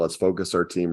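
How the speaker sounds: plain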